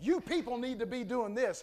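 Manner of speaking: plain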